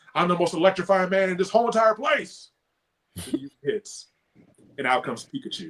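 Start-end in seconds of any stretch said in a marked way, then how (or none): 0.2-2.5 high, pitched-up, taunting yell. Retelling a wrestling match where the opponent yells out: imitating someone yelling. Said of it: "he yells out".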